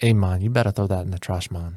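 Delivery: put-on Jamaican-sounding Caribbean accent. Retelling what another chef said about the pizza: imitating Elvis with Jamaican-sounding accent. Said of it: "I know I just sounded Jamaican".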